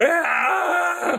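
high, anguished female scream, shrieking cry.

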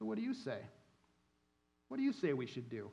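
quiet, snide, needling, snarky tone. Reading aloud the question asked in verse 5, in a mock-snarky tone. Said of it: "Almost a snarky connotation to it".

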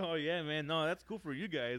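acted laughing along, laughing it off. Retelling being talked to at a desk, acting out laughing it off. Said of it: "I'm like laughing".

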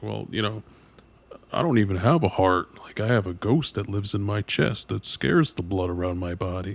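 cartoon gremlin doctor character voice. Retelling a cartoon doctor's line from a show: Ron Swanson voice. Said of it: "the Ron Swanson cartoon gremlin doctor tells him".

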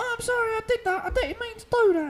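put-on very high little British boy voice. Showing the cast how the character Kellen talks: Kellen voice, little British boy. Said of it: "Kellen is a little British boy".

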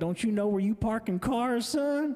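put-on heavy Missouri Ozarks accent. Retelling what the parking lot team boss said to the speaker: thick Ozarks accent. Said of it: "really thick accent from the Ozarks of Missouri".

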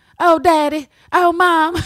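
very slow, loud, bad Southern accent, drawn out. Quoting an actress's lines to Mystique, bad Rogue southern accent. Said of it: "that actress with this bad southern accent".

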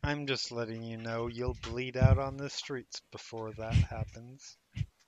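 quiet, low, very soft taunting voice.

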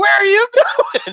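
shrill, very high-pitched screaming yell. Retelling friends screaming at the driver who passed Perkins: retelling a scream. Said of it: "We're all screaming".

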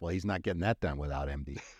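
muttered under breath. Describing what he says when CEOs talk on CNBC, under his breath. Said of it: "I'll just say under my breath".

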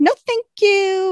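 snotty, standoffish tone, pitched way up. Retelling a scene, turning down the offer of a ride, imitating Waverly's snotty tone. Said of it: "got this snotty kind of, you know, standoffish tone".

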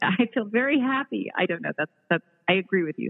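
words spoken through laughter mid-sentence. Answering how doing good and making money feels: laughing while talking. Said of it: "Sorry, I'm laughing".

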